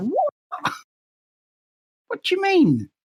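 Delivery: very high, baffled American disbelief. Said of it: "They were just like".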